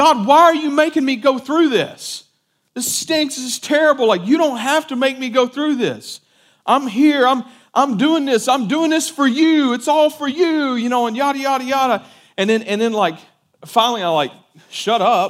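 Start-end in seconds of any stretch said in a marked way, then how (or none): 0.0-10.7 high, furious, screaming angry rant. Retelling a private prayer alone in a room: retelling screaming at God. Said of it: "screaming at God".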